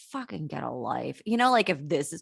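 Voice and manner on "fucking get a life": very quiet, very low, hushed grumble under breath. Retelling what she said to herself about a woman at pickup: imitating muttering under her breath. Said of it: "said to myself under my breath".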